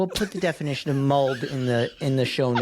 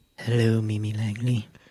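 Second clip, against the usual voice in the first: put-on, a little creepy, eerie tone; 3 semitones lower than usual. Greeting the co-host on a podcast: put-on creepy voice. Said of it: "that was a little creepy".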